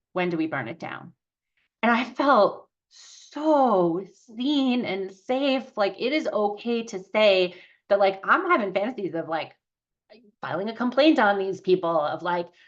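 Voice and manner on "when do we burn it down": dry, fast, flat, expressionless deadpan. Telling of frustration with providers, quoting the supervisor's deadpan question. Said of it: "like deadpan goes".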